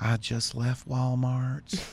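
mock slow, soft delivery. Imitating an Instagram woman's video ending: imitating a slow, soft voice. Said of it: "she speaks real slow and real soft".

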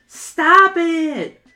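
shrill, high, loud yell. [name] yells at Joseph as he holds smoke up to a bees' nest, shouting. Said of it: "[name] shouts".

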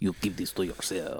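put-on hushed, low, quiet half-German, half-Russian accent. Repeating someone's words to a boyfriend, in a half German, half Russian accent. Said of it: "It's like half German or half Russian, half Spanish".

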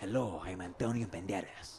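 bad put-on voice, low and drawn out slowly. Showing a bad impression: Antonio Banderas impression. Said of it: "when I say Antonio Banderas".

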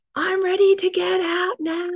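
play-acted, high, loud, top-of-the-voice child's scream. Recalling the speaker's young son in the bath, re-enacting a child's scream. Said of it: "he just screamed".

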